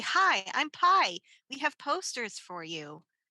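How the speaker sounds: very outgoing, sociable, slow delivery. Player's character walking up to a uniformed goat at a table, very outgoing. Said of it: "in a very outgoing manner and say".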